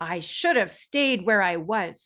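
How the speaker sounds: irritated, angry and annoyed. Reading a quoted line from a story: mock-angry as Paul. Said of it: "I tried to sound angry when I read that as Paul".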